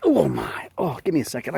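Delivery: sounding hurt and in pain.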